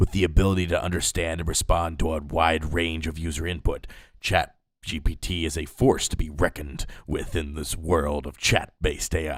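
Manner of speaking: epic, dramatic movie trailer announcer voice. Reading a chatbot-written text aloud, in a movie trailer announcer's voice. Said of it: "in the style of a movie trailer announcer's voice".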